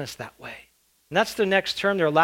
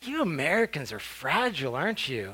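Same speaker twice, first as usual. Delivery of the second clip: play-acted, soft, scornful, disgusted, contemptuous tone; 3 semitones lower, 7 dB quieter than usual. Speaker retells a man's reply to their fear of getting sick, as a mock-disgusted remark. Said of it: "he looked at me almost with so much disgust".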